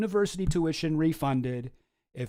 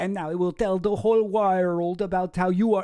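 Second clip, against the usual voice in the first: rough, put-on Brazilian accent; 3 semitones higher than usual. Imitating the ex-wife's threat, trying a Brazilian accent. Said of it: "that sounds more Melania".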